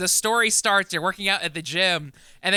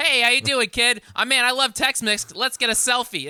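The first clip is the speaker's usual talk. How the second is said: put-on luchador voice with Boston accent, pitched up; 5 semitones higher than usual. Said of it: "sound like they're from Boston".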